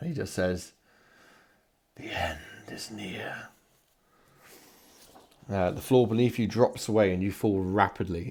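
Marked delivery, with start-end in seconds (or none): 2.0-3.5 faint, hushed, ghostly whisper, drawn out. Narrating a vision appearing in the room, Narfiliac's hushed, ghostly voice. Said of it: "his hushed, ghostly voice".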